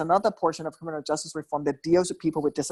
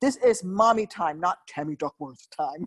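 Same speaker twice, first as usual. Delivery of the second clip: play-acted, very annoyed, irritated little-girl voice; 2 semitones higher than usual. Retelling a daughter interrupting in a grocery store: imitating annoyed daughter. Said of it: "she gets very annoyed".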